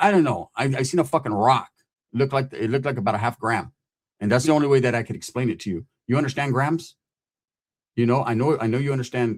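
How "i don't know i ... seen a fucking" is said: usual speaking voice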